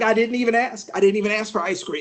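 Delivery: ordinary talk, nothing marked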